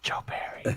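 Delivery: soft, breathy whisper under the breath. Acting out everyone coming up to say the name: imitating people whispering. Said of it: "Everyone's got the whisper".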